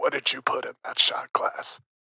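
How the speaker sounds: whispered. Leaning over the bar to ask the bartender in character: whispering in her ear. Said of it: "whisper in her ear".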